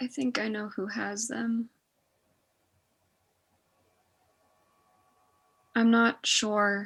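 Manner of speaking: very soft, gentle, hushed, barely-there voice. Voicing a character who answers after a quiet moment: very soft voice. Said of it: "very softly".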